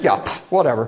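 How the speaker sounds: low, dismissive, totally unbothered brush-off. Imagining a reply to the devil, in a mock-dismissive Jesus impression. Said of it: "My impression of Jesus' response".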